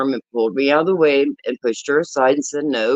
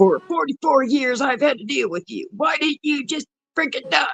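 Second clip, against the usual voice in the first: put-on hateful hollering, pitched higher; 11 semitones higher than usual. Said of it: "started hollering all kinds of hateful things".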